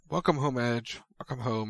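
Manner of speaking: ordinary delivery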